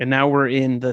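ordinary delivery, nothing marked

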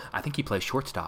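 very soft, distant whispered murmur. Retelling a movie scene where a scout answers from the distance: imitating someone speaking very softly. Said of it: "very softly in the distance go".

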